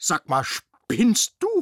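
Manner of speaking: loud, booming, drawn-out bellow with swooping pitch. The robot Rudi bellows as a small dog pees on him: bellowing. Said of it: "brüllte Rudi".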